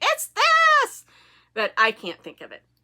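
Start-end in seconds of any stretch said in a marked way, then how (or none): 0.0-1.0 very high, loud, insistent yell. Acting out knitters at home correcting the speaker: imitating viewers yelling at the screen. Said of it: "out there yelling at the screen going".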